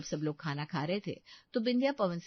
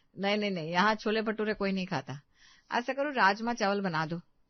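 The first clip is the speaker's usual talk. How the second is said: plain reading voice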